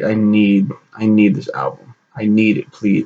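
put-on pleading tone. Retelling begging a parent for an album: imitating own past begging. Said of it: "begged my dad".

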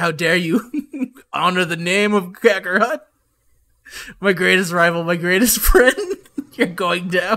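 furious, angry, warrior-like fighter voice. Playing good-guy Vegeta confronting an enemy: angry good-guy Vegeta voice.

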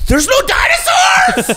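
put-on screaming. Comparing the movie to Jurassic Park without dinosaurs: put-on screaming. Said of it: "I think I'm sc-, screaming too much".

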